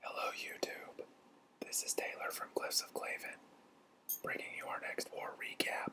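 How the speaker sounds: very quiet, hushed whisper, barely there. YouTuber opening a war recap, not wanting to wake a clan, whispering. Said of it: "I'm whispering because I don't want to wake".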